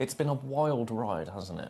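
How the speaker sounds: usual speaking voice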